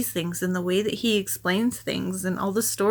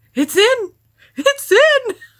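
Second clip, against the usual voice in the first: calm yet excited, very high, slow, drawn-out voice; 11 dB louder than usual. Retelling an overtime goal call by a broadcaster: imitating Pete, calm but excited. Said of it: "so calm but excited about it".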